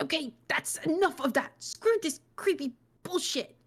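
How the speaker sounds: growled, fed up. Narrator reads a character shutting his eyes in a creepy room, growling. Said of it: "he growled".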